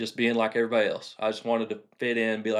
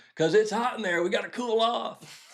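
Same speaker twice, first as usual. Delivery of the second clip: high, shrill, acted-out kid yell; 12 semitones higher than usual. Retelling a younger brother's answer from the back seat: imitating Lee yelling. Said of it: "he yells, he goes".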